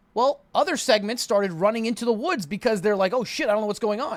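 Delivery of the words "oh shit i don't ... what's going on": ordinary talk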